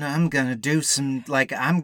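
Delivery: put-on slouched mumbling voice. Describing a slouched-over film character, mumbling James Dean impression.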